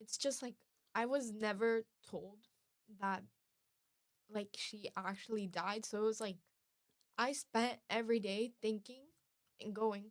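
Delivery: trembling, shaky voice catching mid-phrase. Speaker talks about a loss never talked about before: shaky voice. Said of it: "my voice is really shaky".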